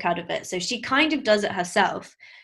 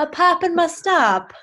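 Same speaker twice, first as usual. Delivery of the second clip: showy theatrical put-on voice, very high, very slow; 10 semitones higher, 6 dB louder than usual. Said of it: "I'm quite good at it".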